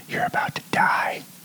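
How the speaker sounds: hushed, slow, threatening, menacing whisper. Showing how one whispers to a spider before smashing it: whispering a threat to a spider. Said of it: "I like to whisper".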